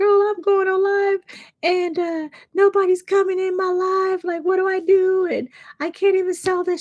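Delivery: put-on, very high, tearful, crying plea. Retelling a live stream where nobody came, to her mentor: imitating her own past crying. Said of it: "I'm crying to her".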